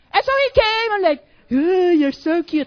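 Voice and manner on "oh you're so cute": play-acted flattering, sugary sweet tone, slow. Retelling what a pursuing guy said: imitating flattering tone.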